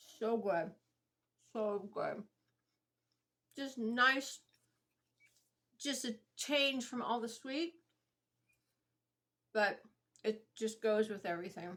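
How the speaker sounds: speaking with mouth full while chewing.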